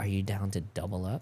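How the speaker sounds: quiet whisper. Retelling how Chris spoke in his ear at an auction: imitating Chris whispering. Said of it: "Chris whispers in my ear".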